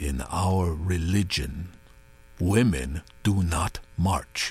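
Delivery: measured, deliberate, low and slow. A man speaks to a woman who must lean forward to hear: very quiet. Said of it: "Abu Zeid spoke so quietly that she had to lean forward to hear him".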